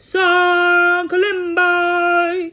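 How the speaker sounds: very high, loud, giant-sized bellow. Storyteller showing listeners at home how to shout the villagers' call, in a loud giant-like bellow. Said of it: "most giant-like voice you have and bellow".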